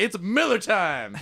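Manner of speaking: play-acted very high, excited, stoked cheer. Retelling a construction worker's line as he walks off site: imitating an excited worker. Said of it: "he's just so excited".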